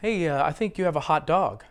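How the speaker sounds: plain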